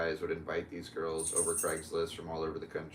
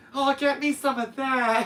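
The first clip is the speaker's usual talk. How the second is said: put-on lady's voice, very high, very loud, drawn out; 11 dB louder than usual. Imitating a lady the speaker loves, in her accent: imitating a lady's accent. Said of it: "That's another accent".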